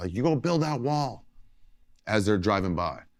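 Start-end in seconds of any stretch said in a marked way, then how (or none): 0.1-1.3 high-pitched, hollered yell. Retelling how someone driving by yelled at comedians, imitating someone yelling. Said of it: "somebody yells".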